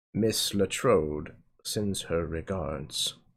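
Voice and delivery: very low hushed murmur. Voicing a bartender who slides the listener a drink, bartender lowering its voice. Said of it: "The bartender lowers its voice".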